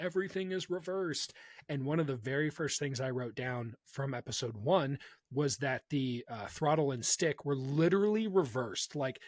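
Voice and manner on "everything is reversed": mock light, half-strength yell, pitched up. Retelling a rebel pilot's line from an episode: imitating someone yelling. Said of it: "she yells out".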